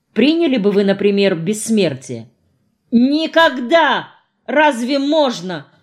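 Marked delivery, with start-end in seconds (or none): 2.9-5.6 high, startled, frightened cry of alarm. A character cries out in fright in reply to a question. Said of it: "вскричала испуганно Рената".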